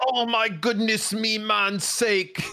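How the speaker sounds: put-on high Jamaican-accented delivery. Quoting what Bren says to the group, imitating Bren sounding Jamaican. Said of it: "Why is he Jamaican?".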